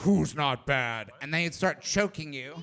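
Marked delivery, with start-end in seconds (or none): 0.0-1.1 deep, low, menacing, threatening villain voice. Pitching a Star Wars scene where he walks in: Lord Vader impression. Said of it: "then Lord Vader comes in and he's like".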